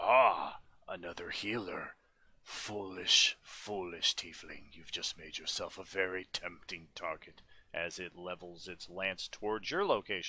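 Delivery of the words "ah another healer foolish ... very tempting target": spat, infernal monster voice. Game narrator voicing the Narzagon as it looks from Dag to Nadir: Narzagon voice spitting words. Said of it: "spits an infernal".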